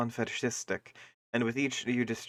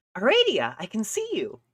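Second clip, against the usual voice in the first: very high-pitched put-on voice; 11 semitones higher, 3 dB louder than usual. Trying out a character's voice while reading together: Aradia voice. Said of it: "just 'cause I wanna try the voice".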